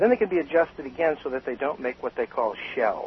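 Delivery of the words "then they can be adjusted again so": usual speaking voice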